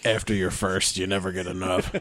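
put-on, creepy southern drawl. Joking about never getting enough after the first kill: put-on creepy southern accent. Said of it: "I always have a southern accent when I do that".

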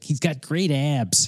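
put-on slow, drawn-out, high Chicago accent. Retelling what a man said, doing his chicago accent. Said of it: "he's like got a Chicago accent".

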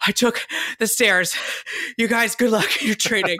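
mock out-of-breath voice. Describing their planned elevator gag, the speaker acts it out, faking being out of breath. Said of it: "I'd be like so out of breath".

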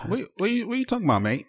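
clumsy fake British accent. Trying the accent again after being teased about it: bad British accent. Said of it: "That's my British accent".

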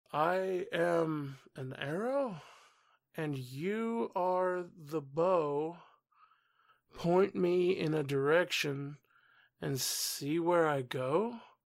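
unhurried, measured, slow and deliberate reading. Reading a passage aloud the way a character reads it, slow and deliberate. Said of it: "Baguio's reading this slowly, and that's why I'm reading it like this".

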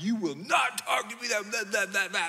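high-pitched, mock scolding, screaming rant. Retelling going up to her room after sending her there, retelling screaming at someone. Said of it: "I'm screaming at".

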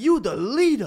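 put-on heavy New York accent, very high and loud. Retelling a man who came up to the group, speaker does a huge New York accent. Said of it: "just this huge New York accent".

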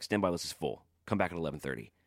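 put-on terse, curt New York accent. Retelling what the doorman said at a sold-out show: imitating a terse New York doorman. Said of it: "typical kind of New York terseness".

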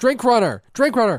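high, loud, repeated yelling call.

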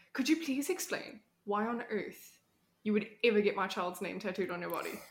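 ordinary talk

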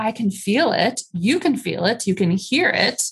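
ordinary talk, nothing marked

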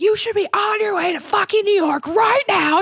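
put-on screaming rant, pitched very high. Retelling screaming at him on the phone in Soho, retelling her own screaming. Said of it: "Like screaming".

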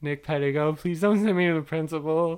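mock-whimpering, acting as if holding back tears. Retelling his terrified younger self in trouble at school: retelling a whimpering plea. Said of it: "while I whimpered".

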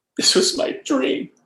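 loud, tearful, crying delivery. Retelling what the guy before him said in his post interview, imitating someone crying. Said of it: "he's crying in his post interview".

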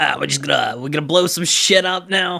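goblin character voice. Showing how an actor would sound voicing Dale, in a Bing Bong goblin voice. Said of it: "That's my Bing Bong voice".

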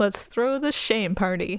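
ordinary delivery

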